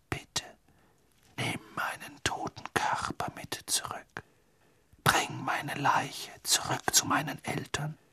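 hushed, breathy, barely voiced whisper. The figure of a dead boy makes a request of another boy, whispering. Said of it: "flüsterte die Gestalt Cedrics".

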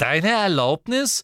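very loud, high, mocking scoff. Ginny answers Ron's warning to her and Harry, mocking. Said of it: "spottete Ginny".

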